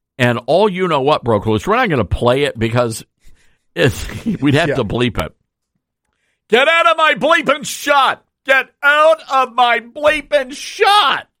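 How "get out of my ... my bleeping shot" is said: screaming, shrill and very high. Retelling how she screamed at a staffer who popped into her interview shot, imitating someone screaming. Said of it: "She's screaming at the poor staffer".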